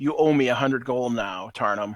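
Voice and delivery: normal talking voice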